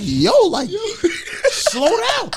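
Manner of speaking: high-pitched voice, laughing while speaking.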